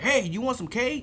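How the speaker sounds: high, eager voice. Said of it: "He'd be like, ten minutes later".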